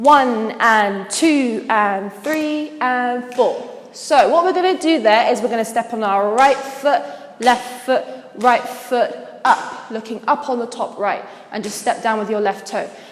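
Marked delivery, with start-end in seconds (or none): 0.0-3.7 slow, drawn-out counting of beats. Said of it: "the next move from here will go".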